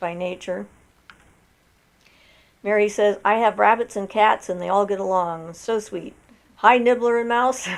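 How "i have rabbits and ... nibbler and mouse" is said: ordinary delivery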